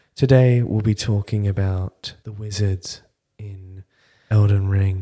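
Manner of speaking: sultry, sexy put-on British accent, played up. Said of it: "I'm doing his voice far more sexily than he does his voice".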